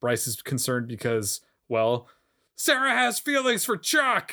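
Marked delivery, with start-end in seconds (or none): 2.6-4.3 loud, emphatic, acted shouty delivery, higher pitch. Retelling what Bryce says about Sarah: loud emphatic put-on voice. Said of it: "that was a nice voice".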